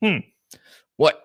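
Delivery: stern, strict voice. Imitating how that person answers a simple question, in a stern voice. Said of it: "with a stern voice and being able to say".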